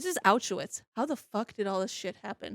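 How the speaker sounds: normal talking voice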